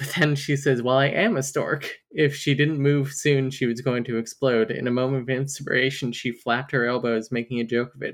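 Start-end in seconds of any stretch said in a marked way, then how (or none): none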